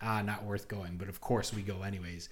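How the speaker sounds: ordinary talk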